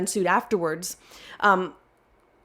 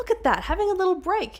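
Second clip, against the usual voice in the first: amused side remark. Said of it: "And I went".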